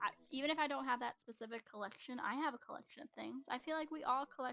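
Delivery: plain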